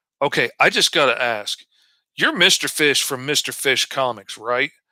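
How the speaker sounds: plain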